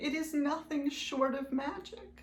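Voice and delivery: fighting back tears. Addressing listeners about a long personal project, holding back tears. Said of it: "I'm gonna try to say it without crying".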